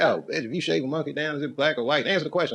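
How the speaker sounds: high, enraged, flipped-out furious shouting. Retelling flipping out on a girl, the speaker acts out yelling at her. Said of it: "as I'm yelling at her".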